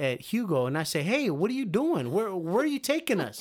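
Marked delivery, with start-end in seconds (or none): 1.0-3.4 play-acted startled shouting, rising and pitched-up. Retelling calling out to a guide while climbing stairs: retelling own past yell. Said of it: "I yelled at".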